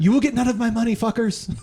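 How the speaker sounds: shrill, very high-pitched yell. Quoting a gamer who yells at others from the other room: imitating someone yelling. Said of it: "Why are you yelling this again?".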